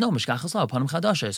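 normal talking voice

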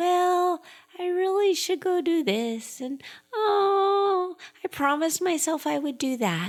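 put-on very high, teeny tiny little voice. Speaking as your inner voice when you're quiet, little teeny tiny voice. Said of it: "this little teeny tiny voice like".

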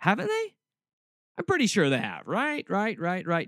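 swooping, snarky, put-on sarcastic tone. Mocking the ethical line just laid out with put-on sarcastic agreement. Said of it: "I'm being sarcastic".

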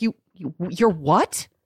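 shocked, stunned, stammering disbelief. Retelling Mary's reply to hearing of reading a book inside: imitating Mary sounding shocked. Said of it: "she was so shocked".

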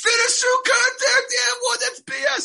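very high, loud, outraged screech. Acting out complaining about a missed foul call: mock screaming. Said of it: "I'm screaming like".

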